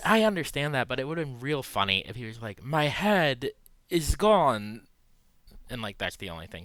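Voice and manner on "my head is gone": very slow, loud, drawn-out delivery. Joking about what a headless character could have said: Christopher Walken impression. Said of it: "you do that impression".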